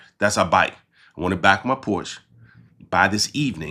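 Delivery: normal talking voice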